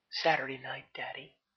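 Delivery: airy, breath-filled voice. Narrator reading a woman's reply to a man's question: breathy tone. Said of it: "she said in a breathy tone".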